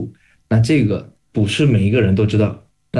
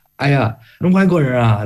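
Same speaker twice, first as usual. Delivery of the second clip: thick put-on Beijing accent with heavy rolled er; 4 semitones higher than usual. Retelling how a beijing uncle greeted foreigners, heavy beijing erhua accent. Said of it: "北京的大叔就是很重的那个儿化音".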